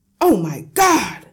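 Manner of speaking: very loud, full, booming yell. The father yells while staring into a little mirror. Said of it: "Yelled the father".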